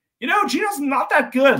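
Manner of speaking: loud, swooping, animated sideline commentary voice. Retelling what someone kept saying during a game: Evan impression. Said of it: "need more Evan impressions from you".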